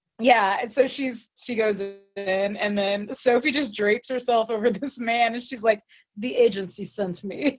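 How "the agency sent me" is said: put-on Russian accent. Speaker retells what Sophie said to a man; put-on Russian accent. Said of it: "like a Russian accent".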